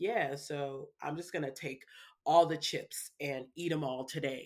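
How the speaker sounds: normal talking voice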